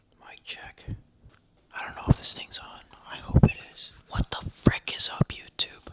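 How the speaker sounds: hushed, soft whisper, barely voiced. Opening a youtube video at six thirty-six in the morning, whispering. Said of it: "I don't know what I'm whispering for".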